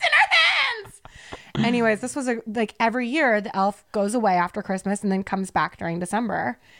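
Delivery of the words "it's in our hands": put-on very high, stretched-out sobbing, crying wail. Retelling kids fleeing the room: imitating screaming crying kids. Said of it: "screaming, crying".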